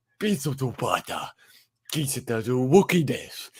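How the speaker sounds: very loud, ponderous, booming crime-boss drawl, slow and heavy. Retelling a comedian's movie impression: Jabba the Hutt voice. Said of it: "especially with the Jabba the Hutt impression".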